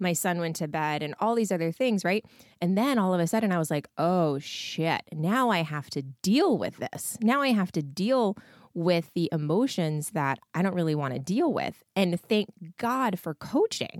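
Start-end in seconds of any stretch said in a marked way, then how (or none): none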